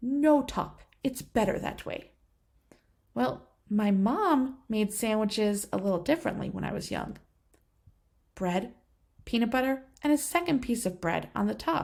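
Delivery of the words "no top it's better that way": put-on Italian accent, matter-of-fact tone. Retelling what a woman who made his sandwiches answered him, in an Italian accent. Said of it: "she would say in her Italian accent".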